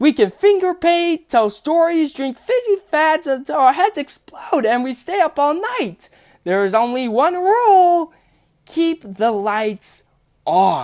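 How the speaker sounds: very high, wildly swooping, somewhat loud, deliberately awful sing-song. Voicing the Sun character greeting a new friend who is up late: bad Sun impression. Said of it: "I'm gonna do the worst impression of the sun".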